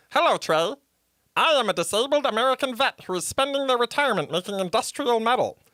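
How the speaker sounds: high-pitched talking-dolphin character voice. Imitating a talking animal greeting a friend and introducing himself in a silly character voice, in a talking dolphin voice. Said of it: "the guy who does the Cave of Wonders".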